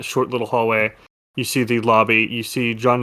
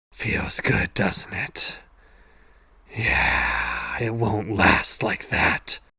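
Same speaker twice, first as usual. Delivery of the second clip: whispered villainous voice, close to the ear; 5 dB quieter than usual. An antagonist whispering into your ear, whispering antagonist. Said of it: "the antagonist whispers in your ear".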